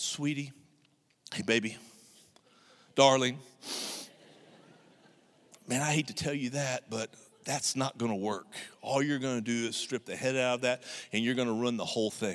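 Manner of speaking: soft, honeyed, extra-sweet nice tone. A self-described not-nice speaker retells speaking to someone, in a mock-sweet, extra nice tone. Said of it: "I'm going to get my nicest tone".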